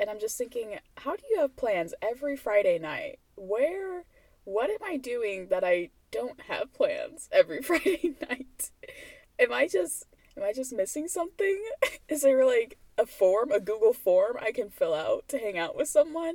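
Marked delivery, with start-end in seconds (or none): 1.0-16.3 voice close to crying, on the verge of tears. Complaining that coworkers always have plans: on the verge of tears. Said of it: "Sounds like I'm on the verge of tears".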